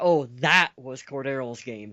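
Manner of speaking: normal talking voice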